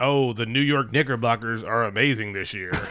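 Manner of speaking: poor put-on American accent. Mocking how he talks, the speaker quotes him in a bad American accent. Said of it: "his American accent is still super shitty".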